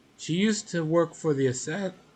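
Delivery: voice breaking mid-word, cracking up high. Describing an upcoming opponent in a story, voice cracking. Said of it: "my voice cracked".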